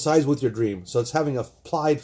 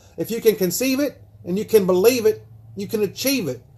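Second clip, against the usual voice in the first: put-on Southern accent spoken at a raised pitch; 7 semitones higher than usual. Quoting the book's author: Napoleon Hill voice. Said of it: "Napoleon Hill kinda talks with a high voice".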